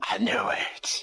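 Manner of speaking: whispered delivery. Voicing a dying neighbor's last words in the game, whispering. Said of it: "And he whispers".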